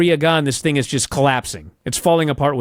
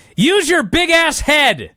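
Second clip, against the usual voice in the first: put-on screeching, very high, shrill scream; 13 semitones higher, 3 dB louder than usual. Retelling a wrestling segment where one wrestler screams at another: imitating someone screaming. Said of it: "Priest screams at him".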